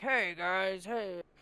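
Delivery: loud, booming, broad voice carrying across the room. Describing a muffled fight as a game master, deep bass voice of Rogan. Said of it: "the deep bass of Rogan being like".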